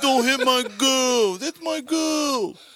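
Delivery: put-on very high, very loud, dim-witted dopey voice. Acting out rival boston and new york fans going at each other, mocking put-on dopey voice. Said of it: "You sound like you're mocking the mentally challenged".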